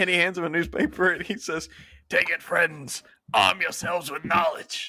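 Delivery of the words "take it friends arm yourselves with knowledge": put-on elderly old-timer's voice. Retelling a scene where a newspaper seller hands someone a paper: old man voice. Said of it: "to just this old man voice".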